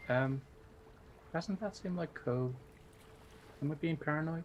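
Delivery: hushed, whispered aside. Leaning toward another character and asking a quiet question: whispering. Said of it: "I'm going to whisper".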